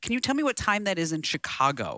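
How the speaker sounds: ordinary talk, nothing marked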